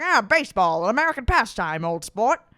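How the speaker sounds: old-timey, cigar-chomping put-on accent. Mocking an actor's accent in the Gatsby role, with a mock Gatsby cigar-chomping accent. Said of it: "talking like he's got a big cigar".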